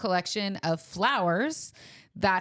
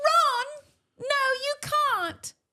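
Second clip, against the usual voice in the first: very high British character voice. Playing with a British accent, your voice sounds like Hermione, so speak to Ron in a Hermione voice. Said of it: "That sounds like Hermione".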